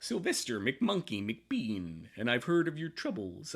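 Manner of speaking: animated newscaster cadence with swooping pitch. Working out a cartoon character's voice, the speaker tries it: Sylvester McMonkey McBean voice. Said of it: "he's got the cadence of Walter Cronkite".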